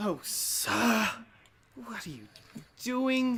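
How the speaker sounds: high, nice little elf butler voice. Narrating a scene, voicing an elf who comes rushing out of a house, in an elf butler's voice. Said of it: "nearly rushing and barging out is this nice elf with, nearly a butler's kind of outfit".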